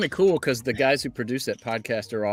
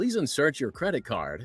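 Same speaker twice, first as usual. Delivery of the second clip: automated machine announcement voice, much quieter; 6 dB quieter than usual. Recalling recording a car wash voice for a video game, automated car wash voice. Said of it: "me being the car wash voice".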